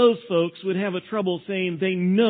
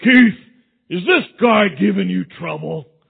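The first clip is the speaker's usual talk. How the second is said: put-on big, booming, rough voice; 6 dB louder than usual. Retelling a big kid from across the street calling out to keith, booming voice. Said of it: "this booming voice came out of the sky".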